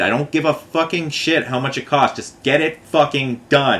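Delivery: frustrated, exasperated outburst. Retelling what the speaker said to the company on the phone: retelling own frustrated outburst. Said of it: "I'm so frustrated".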